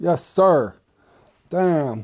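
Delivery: high-pitched loud yell. Talking to the fellas after getting what he wanted, yelling. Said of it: "Sorry for yelling".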